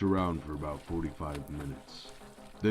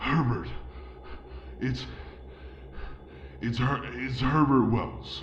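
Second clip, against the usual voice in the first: put-on high, broken, stuttering, halting old man voice; 7 semitones higher than usual. In a read story, a bleeding old man gives his name to campers, stammering. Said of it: "when an old man stumbled into their campsite. He was bleeding. / when an old man stumbled into their campsite. He was bleeding. Ricky and [name] managed to grab the old man before he collapsed to the".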